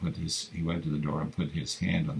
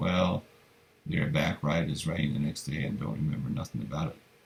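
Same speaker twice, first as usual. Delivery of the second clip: plain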